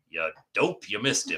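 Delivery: blunt, insulting, talking-object voice. Voicing a talking warhammer mocking a missed attack: blunt warhammer voice. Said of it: "Very blunt warhammer".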